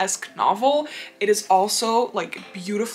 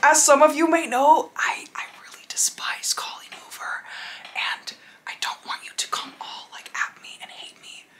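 whisper, higher pitch; 7 semitones higher than usual. Admitting to viewers a dislike of an author, whispering. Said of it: "I'm not gonna stop whispering right now".

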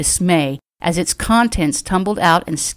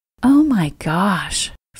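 awed whisper, much slower. Narrating a woman gazing at a man's face: awed whisper. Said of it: "heard herself whisper with awe".

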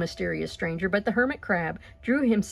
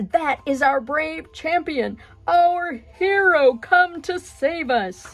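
high, loud, drawn-out exclaiming cry; 7 semitones higher, 6 dB louder than usual. The lobster answers the crab about the mysterious stranger, crying out. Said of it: "cried the lobster".

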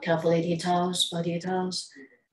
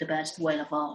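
ordinary talk, nothing marked

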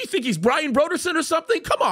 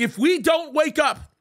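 usual speaking voice

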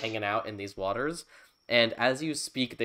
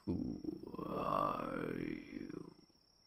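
very deep, rough, creaky creature voice, drawn-out "are"; 12 dB quieter than usual. Voicing an unseen sea creature asking who the player is: much deeper voice. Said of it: "you hear a much deeper voice".

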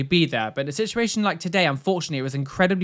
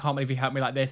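mock tearful voice, lower and quieter; 3 semitones lower, 8 dB quieter than usual. Retelling a grateful woman's words to a helper: imitating someone in tears. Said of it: "in tears".

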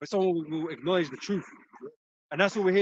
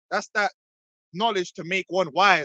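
ordinary delivery

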